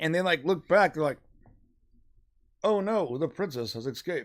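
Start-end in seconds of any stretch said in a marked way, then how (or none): 2.6-4.3 put-on halting politician voice, quieter. Acting out the riders noticing the escape: Obama voice. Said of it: "you sound like Obama".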